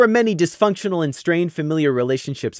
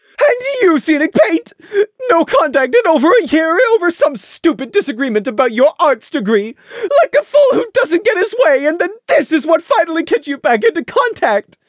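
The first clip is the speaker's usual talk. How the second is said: shrieking at very high pitch; 10 semitones higher, 4 dB louder than usual. A mother shrieks at her son after a year without contact: shrieking. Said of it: "She shrieked at Scenic".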